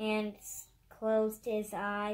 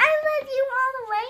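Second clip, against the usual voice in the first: very high, very loud, shrill, excited squeal; 10 dB louder than usual. Reading a story line aloud to show another reader how: excited little scream. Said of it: "Like excited".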